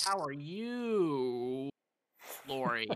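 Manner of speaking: very slow, drawn-out "you". Retelling stalling on a Teams call to learn who he was addressing, drawn-out greeting. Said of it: "really had to draw it out".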